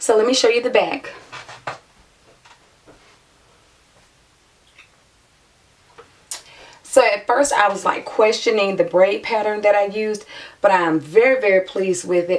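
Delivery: hoarse, voice mostly lost. Showing the back of the braids while the voice is still gone: hoarse, voice mostly lost.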